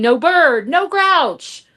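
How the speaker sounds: put-on loud, drawn-out, furious small child scream. Retelling a two-year-old's angry outburst at a panel: imitating a child screaming. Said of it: "So he starts screaming".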